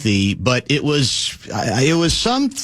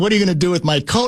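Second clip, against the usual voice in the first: mock-sarcastic tone, faster pace; 4 semitones higher than usual. Retell what a man said when he caught you grabbing his coat, mock-sarcastic. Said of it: "sarcastically saying".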